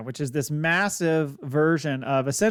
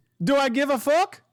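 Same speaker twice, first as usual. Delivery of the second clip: awful fake Italian accent, very high; 10 semitones higher than usual. Voicing a character talking to Chop, in a really terrible Italian accent. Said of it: "in a really terrible Italian accent".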